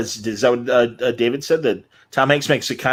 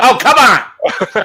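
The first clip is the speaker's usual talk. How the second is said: exasperated outburst, higher and louder; 12 semitones higher, 8 dB louder than usual. Retelling a TV scene's repeated question: imitating Judd Hirsch exasperated. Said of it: "Judd Hirsch's like".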